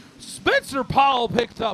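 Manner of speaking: voice cracking. Calling the heat live as Spencer Powell takes the win, voice cracking. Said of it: "I voice cracked there".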